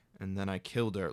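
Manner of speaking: low, hushed, brooding, haunting, reflective delivery. Showing the reflective moment he should have had: haunting, reflective delivery. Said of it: "having a haunting, reflective moment".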